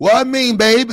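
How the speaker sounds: put-on loud, very high New Orleans accent with lilt. Showing how women from New Orleans say baby: imitating a New Orleans accent. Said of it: "the women from New Orleans voice".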